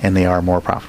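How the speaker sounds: ordinary delivery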